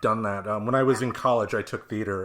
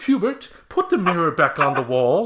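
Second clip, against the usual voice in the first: high, loud, put-on English accent; 8 semitones higher, 8 dB louder than usual. Retelling a play where a character in a wheelchair speaks to them: english accent. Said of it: "everybody was in English accents".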